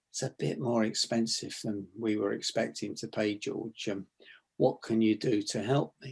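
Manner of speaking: soft low slowed voice. Demonstrating a technique from neuro-linguistics, soft dropped voice, a bit slower. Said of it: "drop your voice with soft tonality, slow your voice down a bit".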